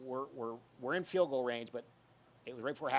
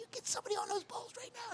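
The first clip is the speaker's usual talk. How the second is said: mock, very high, shrill screaming; 4 dB quieter than usual. Retelling how the coach reacted to wet footballs: imitating someone screaming. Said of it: "screaming at me".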